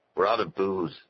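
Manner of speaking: plain reading voice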